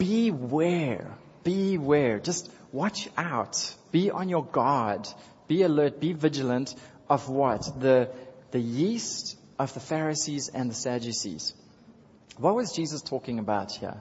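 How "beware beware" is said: "beware" stretched out in a cautioning tone. Leading the crowd in repeating the word, in a beware voice. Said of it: "Can you do it in a beware voice?".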